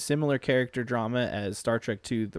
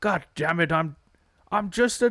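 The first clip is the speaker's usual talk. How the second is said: put-on gruff doctor voice, pitched higher; 6 semitones higher, 4 dB louder than usual. Trying to act out a Star Trek character, slipping into McCoy voice. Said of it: "I'm doing McCoy's voice".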